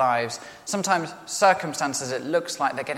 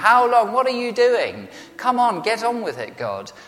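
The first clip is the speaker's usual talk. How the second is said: acted, exasperated, impatient, raised and high; 8 semitones higher, 6 dB louder than usual. Speaker voicing the psalmist's cry to god, acting out frustration. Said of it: "you can just hear the frustration in the voice".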